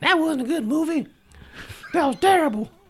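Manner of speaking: very high, squeaky puppet voice.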